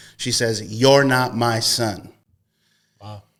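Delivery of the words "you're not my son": put-on angry, boastful tone. Retelling what the speaker's mom said in a shouting match: retelling an angry boast. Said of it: "out of anger, she says with a boasting voice".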